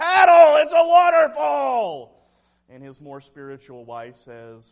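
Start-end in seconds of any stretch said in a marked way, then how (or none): 0.0-2.3 drawn-out, very high, very loud scream. Retelling how a pastor screamed to his family in the rapids, retelling a scream. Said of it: "the pastor screams to his family".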